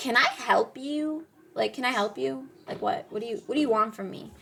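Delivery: put-on sassy, snippy, confrontational tone with attitude. Retelling confronting a slow truck beside her: imitating own attitude. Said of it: "real attitude".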